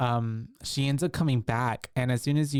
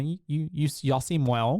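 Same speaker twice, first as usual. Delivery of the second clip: ordinary talk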